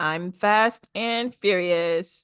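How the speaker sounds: dead, flat, very slow monotone. Imitating race driver Nicole's line: monotone imitation of Nicole. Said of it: "She's so monotone".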